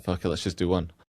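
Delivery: plain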